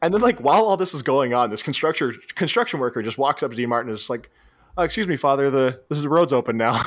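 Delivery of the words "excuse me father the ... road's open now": put-on nonchalant tone. Retelling how a construction worker interrupts a brawl: imitating a nonchalant tone. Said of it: "Just all nonchalant".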